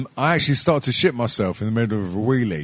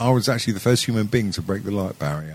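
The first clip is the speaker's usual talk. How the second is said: ordinary talk, nothing marked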